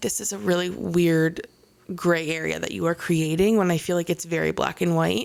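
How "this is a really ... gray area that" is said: plain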